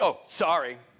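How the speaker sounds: offhand, throwaway, insincere tone with nothing behind it. Acting out apologizing to a wife: imitating an insincere apology. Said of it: "You ain't sorry".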